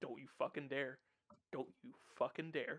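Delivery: scolding tone like talking to a cat. Talking to Kaz like a cat about to knock something off a table. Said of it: "talks to Kaz like a cat".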